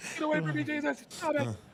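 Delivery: put-on, very high, terrified panicked shriek. Retelling a bad trip, running down the street, acting out screaming out loud. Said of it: "I'm screaming this shit out loud".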